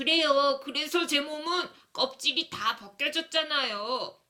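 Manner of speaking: small, storybook-style little bunny voice. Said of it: "내가 갑자기 토시기 목소리를 냈어요".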